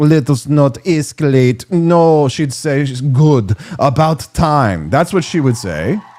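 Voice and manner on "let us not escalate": put-on Russian accent. Imagining what she would say, spoken in a put-on Russian accent. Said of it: "in a Russian accent".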